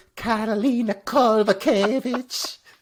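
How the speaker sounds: mock ring announcer, high, slow, loud, drawn out.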